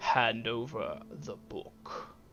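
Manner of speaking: giant character voice, blunt and demanding. Voicing a giant demanding a book: thunderous booming giant voice. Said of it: "the giant's thunderous voice booms out again".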